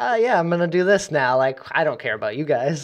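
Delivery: careless, dismissive tone. Describing a game hero who doesn't care: imitating Flicker not caring. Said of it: "he just doesn't care".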